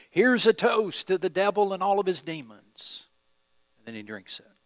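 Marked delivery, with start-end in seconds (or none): 0.2-3.1 loud, pitched-up shouting. Telling a congregation what a man did, retelling his shouted toast. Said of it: "he shouts to you".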